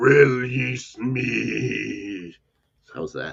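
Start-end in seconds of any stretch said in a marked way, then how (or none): 0.0-2.4 haunting, eerie, creepy voice with "me" drawn out. Recapping a scene, the speaker voices an unseen figure calling out: creepy voice. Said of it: "I was trying to be creepy".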